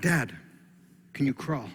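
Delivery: put-on sweet voice. A dad retelling his child asking him questions, imitating a sweet voice. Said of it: "So the sweet voice comes back on".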